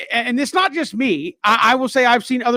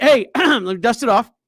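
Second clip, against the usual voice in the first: dry, grudging, reluctant coach voice. Doing the best possible impression of the coach who dislikes media: Dave Doeren impression. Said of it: "the best impression I could do of him".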